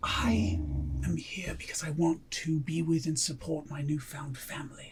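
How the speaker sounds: slow, very quiet, secretive leaning-in whisper. Voicing a character leaning in so nobody else hears: whispering in character. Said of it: "Porfin's gonna lean in and whisper".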